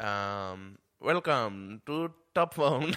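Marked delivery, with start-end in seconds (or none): 1.0-2.9 put-on, mock Indian accent. Answering how a Top Gear for phones would sound: put-on Indian accent. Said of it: "they're doing the accent".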